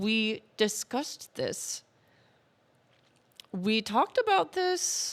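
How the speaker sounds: words squeezed out through clenched teeth. Speaker acts out viewers addressing Poppy, imitating talking through gritted teeth. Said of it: "through gritted teeth going".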